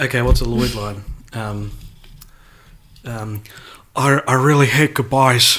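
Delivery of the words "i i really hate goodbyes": halting actor voice, stuttered start, then smooth delivery. Doing a Lloyd line when asked: Nicolas Cage impression. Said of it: "That was my Nicolas Cage impression".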